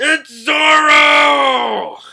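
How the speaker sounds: loud, very slow, drawn-out angry shout.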